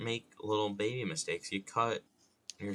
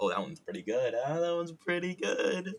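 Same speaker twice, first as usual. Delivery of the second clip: proud, pleased, delighted tone, pitched up; 8 semitones higher than usual. Reacting to a joke line just made up: proud of himself. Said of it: "You could hear it in my voice".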